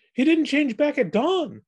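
very high, quavering, trembling voice. Theo speaks about Donnie, his voice trembling with every word. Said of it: "his eyes wide and his voice trembling with every word".

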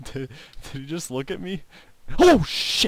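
frightened outburst. Playing a game, startled when the creature seems to look back, scared. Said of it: "That legitimately scared the living crap out of me".

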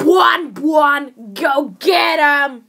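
loud, belted animatronic robot bear voice. Showing off character impressions, doing a Fantasy Freddy voice. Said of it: "I can also do a good Fantasy Freddy".

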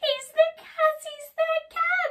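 very high, very loud, shrill, panicked and frightened cry. Squeak the mouse spots something furry in the cupboard's shadow, crying out. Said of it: "he cried".

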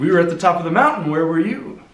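cocky, brash tone. Retelling what one said to someone who came looking: imitating own cocky voice. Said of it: "in kind of a cocky voice".

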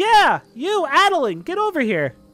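very loud, very high, shrill, drawn-out scream. Voicing a woman who calls Addilyn over, screaming across the way. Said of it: "She goes".

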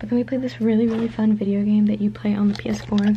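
hushed whisper. Speaker recounting their day, whispering because someone is outside the door. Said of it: "so I'm whispering".

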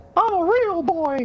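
very high falsetto cartoon puppet-boy voice. Trying out cartoon voices with the others, Pinocchio voice. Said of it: "that there's the Pinocchio".

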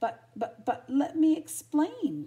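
stammering. Narrator reads the male character's reply after being snarled at, stammered. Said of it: "stammered Tramp".

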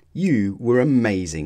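ordinary delivery

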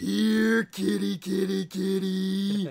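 slow, creepy, stretched-out call. Retelling how an intro ended: creepy voice imitating Farouk. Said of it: "this really creepy sounding".

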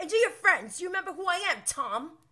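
hyped up, very high and loud. Retelling James confronting Tom: imitating hyped James. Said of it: "James is just so hyped".

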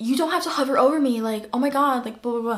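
yelled, scolding. Retelling what the manager said while waiting behind her: imitating manager yelling. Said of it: "she turns around and she yells at me".

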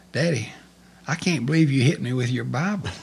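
put-on crying child's voice, sobbing out words. Retelling the words of a crying son who was hit: imitating a child crying. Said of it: "started crying, and he said".

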